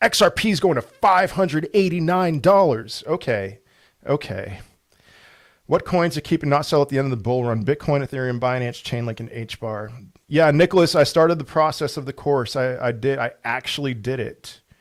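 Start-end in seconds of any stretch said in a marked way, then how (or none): 0.0-3.0 tongue-in-cheek, bold, sarcastic, fake-serious tone. Answering live chat questions about a coin price, sarcastic. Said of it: "I'm being sarcastic now".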